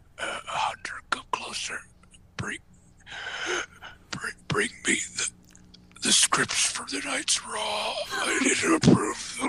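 faint, dying whisper, stumbling over words. Joking about a boss in the last minutes of his life: imitating Vince on his deathbed. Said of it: "in the last few minutes of his life".

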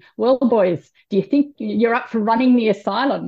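loud Northern Irish voice. Quoting her husband, overheard through the door talking to the boys, in a northern irish accent. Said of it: "in his beautiful Northern Irish accent saying".

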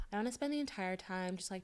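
put-on soft, hushed pretty girl voice. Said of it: "are you still putting on your pretty girl voice".

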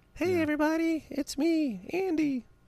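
very high, slow, squeaky, drawn-out voice. Doing a made-up impression of the quarterback: high-pitched Andy Dalton impression. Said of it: "He looks like he have a high-pitched voice".

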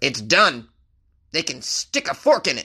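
hammed-up delivery with big pitch swings. Reading the mayor's quote about canning the event: Mayor Reed impression. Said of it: "That's my impression of Mayor Reed. I'd imagine he talks like that".

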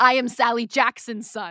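fake high scream. Recapping the scene where he yells at the god, retelling Walker Scobell's scream. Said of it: "Walker Scobell screams".

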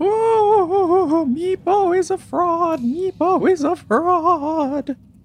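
very high, blubbering, bawling wail. Narrator voices a weeping character right after describing his tears, Meepo bawling and crying. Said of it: "he starts bawling and crying".

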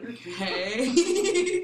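high, loud "okay" said while laughing.

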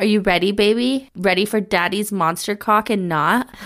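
plain reading voice

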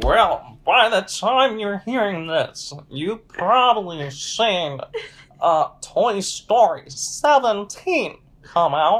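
put-on very slow old man voice. Joking about when the episode will come out: put-on old man voice. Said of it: "That's like doing an old man".

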